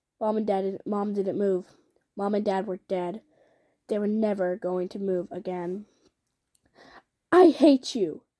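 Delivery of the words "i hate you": vicious, louder and much slower. Beside her dead parents, a girl proclaims to a tall man, vicious. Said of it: "Vivi proclaimed to the tall man with a viciousness".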